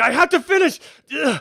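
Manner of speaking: very high, very loud, shrill, piercing shriek. Game master voicing a bleeding man as his arm is moved: screaming. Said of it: "He's like screaming".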